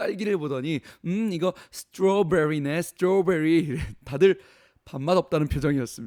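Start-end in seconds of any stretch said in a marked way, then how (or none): 1.1-3.8 showy rolling English pronunciation of strawberry. Retelling a young woman showing off at a fancy restaurant, with rolled English pronunciation. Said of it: "발음을 굴리는 거예요".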